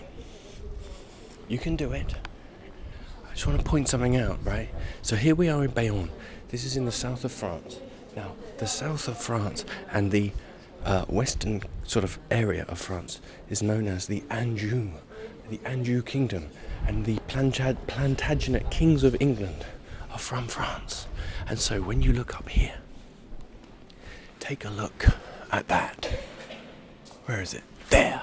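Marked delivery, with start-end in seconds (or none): 20.1-26.1 soft, unvoiced whisper. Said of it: "which is why I'm whispering".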